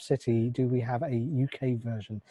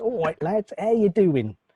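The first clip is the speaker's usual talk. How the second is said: put-on cheeky Essex geezer accent, pitched up; 8 semitones higher, 4 dB louder than usual. Reading a listener's letter from the mailbag, a host does an Essex accent impression. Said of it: "That's my Essex impression".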